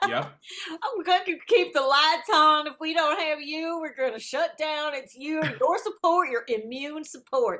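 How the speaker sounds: put-on Deep South accent. Imitating Alex Jones selling products: Alex Jones impression, Deep South accent. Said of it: "Why does he have a Deep South accent".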